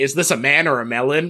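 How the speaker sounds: normal talking voice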